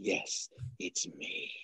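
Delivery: hushed, breathy villain voice with evil relish. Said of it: "he does that evil smile".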